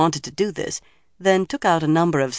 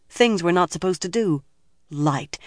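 plain reading voice

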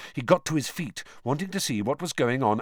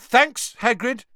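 raised, loud, very high-pitched voice; 10 semitones higher, 7 dB louder than usual. Harry answers hagrid loudly so that hagrid won't blunder on. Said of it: "said Harry loudly".

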